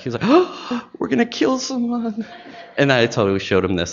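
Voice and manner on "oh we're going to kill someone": put-on very high, alarmed, panicked freak-out. Retelling how the HR person reacted to new curling irons: imitating someone freaking out. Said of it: "totally freaked out".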